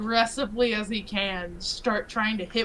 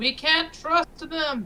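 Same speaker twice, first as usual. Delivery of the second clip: shouting, much higher pitch; 7 semitones higher than usual. A character shouts back at an elephant during an argument; shouting. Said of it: "I shout".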